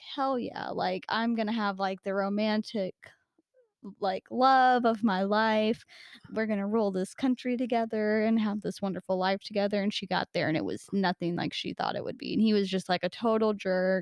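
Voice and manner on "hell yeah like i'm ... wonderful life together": ordinary talk, nothing marked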